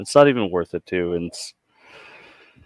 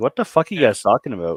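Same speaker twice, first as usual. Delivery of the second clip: ordinary talk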